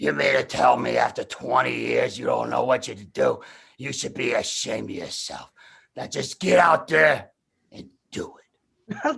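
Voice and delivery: rough, raspy, creaky boxing trainer voice. Retelling Mick's deathbed scene from Rocky Three: Mick voice. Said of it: "and Mick goes".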